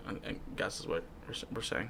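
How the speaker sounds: very soft, quiet, whispered trail-off.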